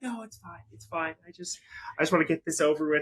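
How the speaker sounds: acted embarrassed, high, mortified, dismissive voice. Retelling how an uncomfortable reverend answered at a dive bar wedding: imitating a mortified woman. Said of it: "Clearly is just mortified".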